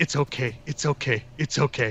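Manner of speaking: soft, hushed whisper. Retelling running out into a courtyard, speaking to a puppy: whispering.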